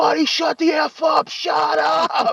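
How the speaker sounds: very high, very slow, drawn-out hollering. Retelling the moment a beer shattered in the car: imitating own yelling. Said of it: "and I'm yelling".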